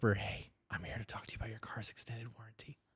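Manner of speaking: very hushed, quiet, flirty, breathy whisper. Showing how to start flirting by leaning in close: whispering a joke line. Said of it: "Lean in and whisper".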